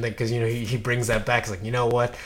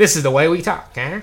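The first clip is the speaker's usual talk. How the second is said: put-on higher-pitched 1930s-40s old-time radio announcer voice; 6 semitones higher, 5 dB louder than usual. Joking about why everyone in the 30s and 40s talked alike; 1930s-40s announcer voice. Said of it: "that announcer voice".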